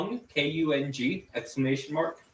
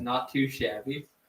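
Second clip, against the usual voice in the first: ordinary talk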